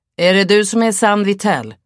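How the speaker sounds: loud, high call. A man by a van calls out to Sam across the street; calling out. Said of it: "Ropade han".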